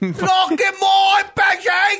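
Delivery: mocking British-accent shout. Poking fun at the other speakers' British impressions, in a loud mock British accent. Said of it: "Why do they get so loud?".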